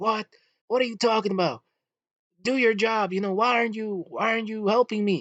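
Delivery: very high-pitched yelling voice. Retelling how a woman at the DMV started yelling: imitating a woman yelling. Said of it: "this woman just starts yelling again".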